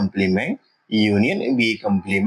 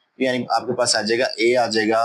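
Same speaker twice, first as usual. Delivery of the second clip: ordinary talk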